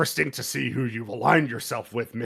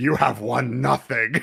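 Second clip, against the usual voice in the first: mock threatening whisper; 4 dB louder than usual. Retelling a show's ending where Fisk whispers: whispering as Fisk. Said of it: "and then Fisk whispers".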